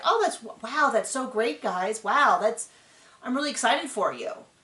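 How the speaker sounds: put-on polite, lukewarm, unenthused tone. Retelling how Mary reacts to the adoption news: imitating Mary, polite but unenthused. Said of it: "That's sort of the attitude that Mary has".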